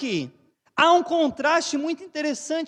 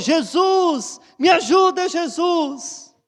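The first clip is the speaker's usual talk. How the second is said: mock, slow, drawn-out pleading shout; 2 semitones higher, 4 dB louder than usual. Acting out the healed man crying out to Jesus: imitating a shout for mercy. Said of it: "Esse gritou".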